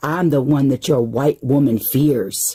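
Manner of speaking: usual speaking voice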